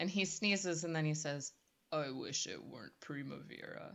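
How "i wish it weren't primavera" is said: very deep cat voice, bottom of range. Quoting the cartoon cat's line after it sneezes: very deep James Earl Jones voice. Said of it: "a very deep, like, James Earl Jones voice".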